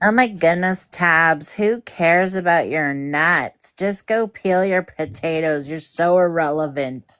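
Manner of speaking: slow delivery, "nuts" stretched and drawn out. Imitating what the others say about her nuts: Colton impression. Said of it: "an impression of Colton".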